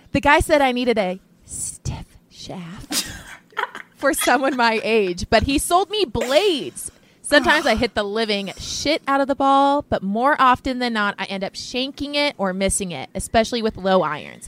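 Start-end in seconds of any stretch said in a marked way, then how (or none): 0.2-5.3 slow, deliberate, drawn-out, unhurried delivery. Rereading a line from a listener email when asked: said slower. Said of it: "say it slower this time".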